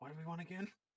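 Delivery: half-whispered under the breath, hushed stage whisper. Retelling what someone said while trading, imitating a half-whisper.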